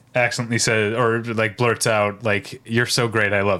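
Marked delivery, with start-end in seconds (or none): none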